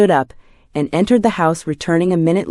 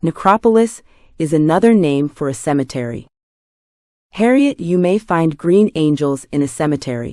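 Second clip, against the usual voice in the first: plain reading voice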